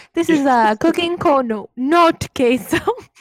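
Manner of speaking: very loud, high-pitched fake Italian accent. Imitating how Wally imitates the person he is talking to: Wally's fake Italian accent. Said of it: "his little fake Italian accent".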